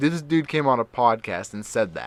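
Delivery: plain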